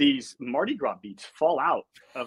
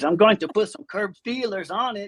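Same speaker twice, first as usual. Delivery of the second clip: fake Spanish accent, high-pitched, raised voice; 7 semitones higher, 6 dB louder than usual.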